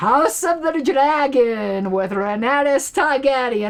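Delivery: high-pitched, badly done fake Russian accent. A youtuber signs off, announcing sunday's video, in a bad russian accent. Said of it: "It's my bad Russian accent".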